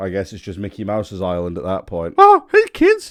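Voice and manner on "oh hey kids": pitched way up and loud. Reviewer joking about a toy train's look, Mickey Mouse voice. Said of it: "I'm not fucking committed to that".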